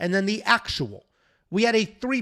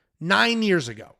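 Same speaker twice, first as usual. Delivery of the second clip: ordinary delivery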